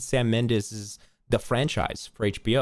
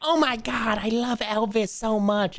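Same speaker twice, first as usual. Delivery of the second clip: put-on full old lady voice, very high, slow, drawn-out; 11 semitones higher than usual. Retelling a comedy sketch where he played an old lady, imitating an old-lady voice. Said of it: "he did full like an old lady".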